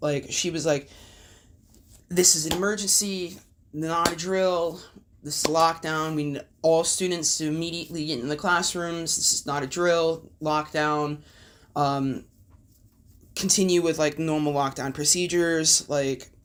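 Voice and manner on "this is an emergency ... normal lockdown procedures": ordinary talk, nothing marked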